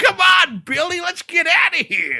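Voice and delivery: belted high, like a cartoon taxi. Picturing the cab talking like the one in Roger Rabbit: Roger Rabbit cab voice. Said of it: "it should talk like, uh, the cab and Roger Rabbit".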